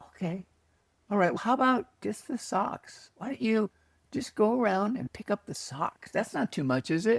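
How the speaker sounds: mild, gentle, easygoing soft voice. Retelling what a gentle inner voice said: imitating a gentle inner voice. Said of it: "this voice was just, just gentle".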